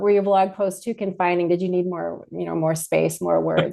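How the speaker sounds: plain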